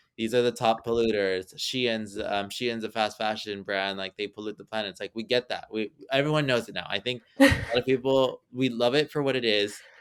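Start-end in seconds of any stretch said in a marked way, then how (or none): none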